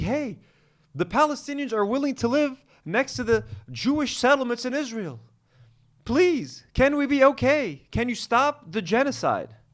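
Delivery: polite, courteous, nice tone. Mocking a man's idea of asking Washington nicely: mock polite request. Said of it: "go ask the people in Washington, D C nicely".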